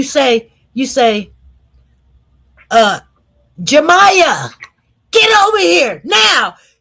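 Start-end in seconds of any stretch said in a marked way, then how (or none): 2.7-6.5 shrill, loud, swooping scream. Showing how a parent calls a child back from a street with a car coming, screaming. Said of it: "You you scream it".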